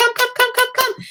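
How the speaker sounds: very high-pitched, rapid call. Explaining how to get a dog to come when called: high-pitched dog call. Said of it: "you're going to use a high pitched voice".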